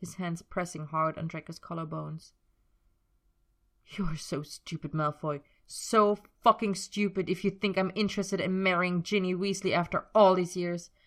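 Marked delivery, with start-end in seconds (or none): 3.9-10.9 snarled, cutting outburst. Narrator reads a man's line as he pins another man against a wall, snarled. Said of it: "He snarled and pinned Draco against the wall".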